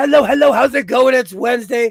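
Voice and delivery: loud, hoarse, croaking voice. Opening the show with a voice only partly back, croaky voice. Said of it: "I'm croaky".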